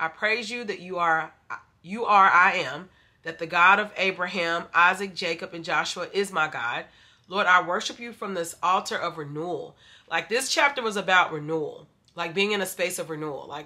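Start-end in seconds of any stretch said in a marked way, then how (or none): none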